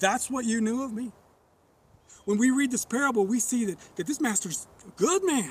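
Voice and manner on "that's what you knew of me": mock, imitated sarcastic tone. Retelling the master's reply in a parable, imitating a sarcastic question. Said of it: "Kind of a sarcastic question".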